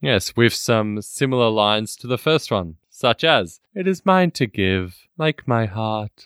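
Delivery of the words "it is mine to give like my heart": wooden put-on actress voice, lower pitch. Quoting a film line in a Liv Tyler impression. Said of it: "do a very, very good Liv Tyler impersonation".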